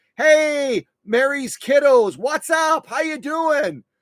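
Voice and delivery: high, loud, cheery shout.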